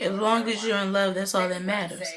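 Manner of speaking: normal talking voice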